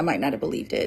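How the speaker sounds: spoken as if thinking to oneself.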